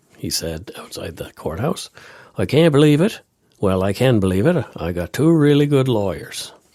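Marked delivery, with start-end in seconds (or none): 2.4-6.5 put-on raised, high-pitched Newfoundland accent. Reading out a quote from an acquitted murder suspect: Newfoundland accent. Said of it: "I'm gonna use a Newfie accent".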